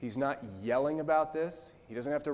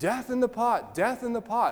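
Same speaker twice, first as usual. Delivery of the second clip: mock yelling, higher and louder than normal; 10 semitones higher, 6 dB louder than usual. Retelling how the pastor kept yelling the same phrase, retelling a pastor's yelling. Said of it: "the pastor just kept yelling".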